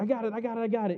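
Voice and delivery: put-on high, eager, insistent childlike voice.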